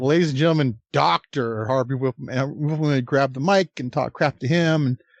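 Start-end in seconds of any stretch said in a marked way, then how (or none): 0.0-2.3 put-on sarcastic announcer voice. Remembering the Fink's introductions, the speaker retells one in mock sarcasm. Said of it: "he would say it sarcastically".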